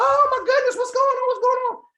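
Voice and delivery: shrill, very high-pitched, loud screaming cry. Retelling a wife's reaction when her husband collapses: imitating a screaming wife. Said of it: "Wife screaming".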